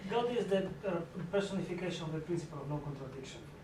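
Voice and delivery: rapid confident delivery. Quoting a statement during a discussion, very fast. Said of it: "out very quickly".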